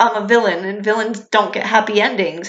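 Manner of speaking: ordinary talk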